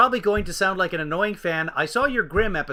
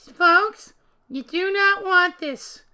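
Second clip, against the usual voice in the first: squeaky, very high, very slow, drawn-out voice; 13 semitones higher than usual. Reading a message from a friend aloud: Lindsay's voice. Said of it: "I'll do Lindsay's voice".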